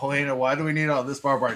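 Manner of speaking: normal talking voice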